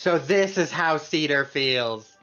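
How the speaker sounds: exaggerated mocking tone. Quoting what someone goes and says, retelling an exaggerated mocking tone. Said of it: "obviously exaggerated go- tone".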